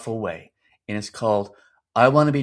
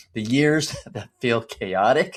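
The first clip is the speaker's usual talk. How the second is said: talking with a laugh, laughing through the words. A father talking to dads with young kids, laughing. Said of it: "I'm laughing".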